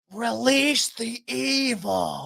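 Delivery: rough, creaky voice, evil drawn out. Urging another speaker to watch the movie, doing a Little Nicky impression. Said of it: "I hope that's a pretty good impression of it".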